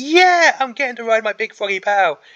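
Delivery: loud, high, beaming, happy-go-lucky cheerful gush. Speaker voices a miniature army leader riding a frog, imitating a cheerful leader. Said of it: "He is such a cheerful guy".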